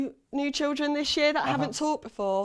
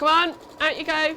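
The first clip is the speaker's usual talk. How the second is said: firm, commanding, strict teacher voice; 3 semitones higher than usual. Telling someone to get out, switching to a teacher voice. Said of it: "Using my teacher voice".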